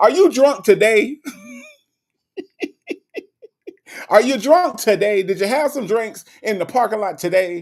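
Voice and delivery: accusing grilling tone, high, swooping and animated. Retelling how a judge accuses someone of drinking: Judge Mathis impression accusing. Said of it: "That's just how he do".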